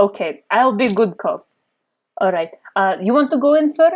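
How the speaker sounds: put-on speaking in a Russian accent. Agreeing to play good cop alongside a partner, in a russian accent. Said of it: "Russian accent really makes you seem like a villain".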